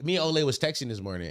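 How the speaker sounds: ordinary talk, nothing marked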